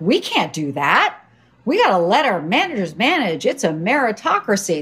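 swooping put-on voice. Recalling your co-founder's objection to your hiring rule, speak in a mock co-founder voice. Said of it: "That's my co-founder voice".

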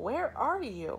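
calling out, high and loud. A shark waiting under a tree calls out loudly to a monkey. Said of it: "he called out loudly".

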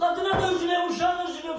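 angry, shouted outburst.

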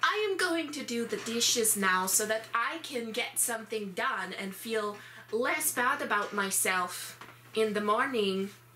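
bright, happy, cheerful cartoon character voice. Explaining what you do in a terrible mood, demonstrate the Jester voice. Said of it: "I honestly do the Jester voice all the time".

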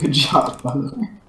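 words broken up by laughter. Complimenting a teammate during a game, laughing while talking. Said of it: "Why are you laughing when saying that?".

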